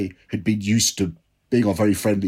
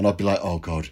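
normal talking voice

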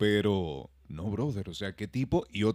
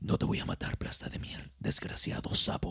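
hushed, breathy, whispered superhero voice. Explaining how people imagine Batman talking to them: Batman voice. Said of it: "tú te imaginas este tipo que te habla así".

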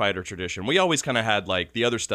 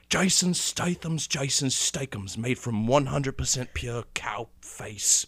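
slow, drawn-out sales pitch voice, word by word; 4 semitones higher, 4 dB quieter than usual. Retelling a sketch about selling meat: Jason Statham impression. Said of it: "where he does the Jason Statham".

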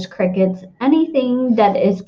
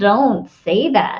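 groaned, groaning through the words. Reading a story aloud, one character answers another: groaning. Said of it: "groaned Wilbur".

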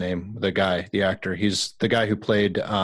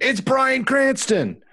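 put-on yelling. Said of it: "Candace was probably yelling the whole time going".

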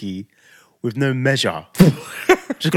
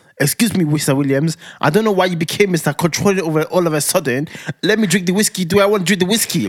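mock sassy, affronted, angry, fresh-mouthed tone; 4 semitones higher than usual. Retelling a friend's angry reply about drinking whiskey: imitating Blessy angry. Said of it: "That's how she sounds, 'cause when Blessy gets angry".

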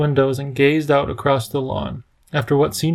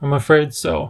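ordinary delivery

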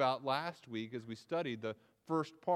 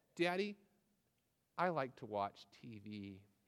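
put-on shy child voice, quieter, slower; 2 semitones lower, 6 dB quieter than usual. A father acts out his daughter coming to him, imitating a shy child. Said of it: "will come to me very shyly and timidly".

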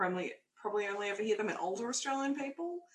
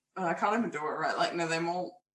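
plain

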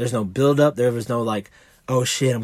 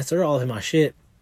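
normal talking voice

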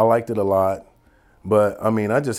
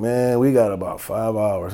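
plain

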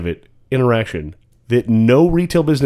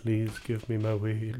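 mock reverent, timid tone, quieter; 14 dB quieter than usual. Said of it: "a reverend space where I'm just like".

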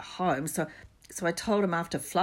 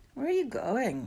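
drowsy, half-awake voice, pitched a bit high; 6 semitones higher than usual. Narrator reading Ron's question as Harry jumps to his feet, sleepy. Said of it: "said Ron sleepily".

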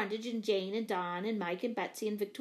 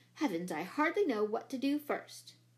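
plain reading voice

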